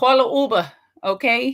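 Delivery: loud, slow, attempted East Coast accent. Repeating advice to call an Uber: attempted East Coast accent. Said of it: "I'ma say it in the East Coast".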